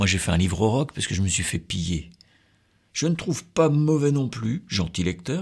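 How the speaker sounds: plain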